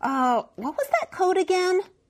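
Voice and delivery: very high-pitched mumble. At the counter, forced to ask a colleague for the code again, mumbled. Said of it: "forced to turn to Monique once more and mumbled".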